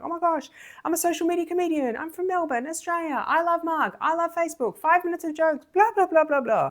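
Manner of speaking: play-acted, very high, gushing excited babble. Retelling meeting the comms guy: imitating own excited gushing. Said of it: "all the excitement just poured out".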